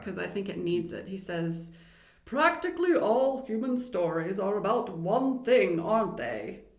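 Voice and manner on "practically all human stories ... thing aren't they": put-on English accent, raised, holding forth. Quoting a man's opening remark, in a put-on English accent. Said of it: "I'm gonna do his English accent".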